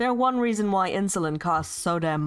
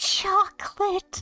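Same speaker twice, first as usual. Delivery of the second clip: imitated little girl voice; 13 semitones higher than usual. Quoting a meme back to others, imitating a little girl from a meme. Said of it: "the little girl where".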